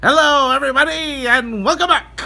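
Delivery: very high, loud nineteen-twenties radio announcer voice. Starting a review by greeting everybody: 1920s radio announcer voice. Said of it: "I'll do it in my nineteen twenties radio voice".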